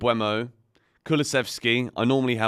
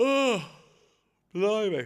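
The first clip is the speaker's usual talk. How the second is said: yawning with voice way up high; 11 semitones higher than usual. Talking to viewers after a late night, the speaker is yawning. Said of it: "I'm yawning".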